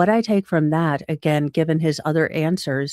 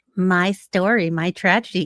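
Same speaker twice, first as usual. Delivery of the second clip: mock slow, patronising, condescending drawl; 2 semitones higher than usual. Mimicking the Commonwealth's questioning of a witness: imitating a condescending tone. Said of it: "when you condescendingly go".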